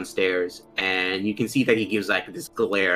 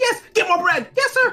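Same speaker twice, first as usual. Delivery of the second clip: shrill, very high, loud scream; 5 dB louder than usual. Voicing a character who calls for more bread: screaming for her. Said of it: "screaming for her".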